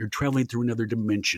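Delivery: put-on TV narrator voice. Recalling being asked to do Rod Serling, then launching in: Rod Serling voice. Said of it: "we're looking for Rod Serling, you think you could do that? And I was like".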